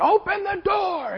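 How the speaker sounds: shrill screaming with voice pitched way up. Speaker retells knocking on a door and reenacts a scream at the man inside. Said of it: "I'm screaming at him".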